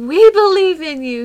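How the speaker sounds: put-on little boy voice cheering loudly. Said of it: "he said".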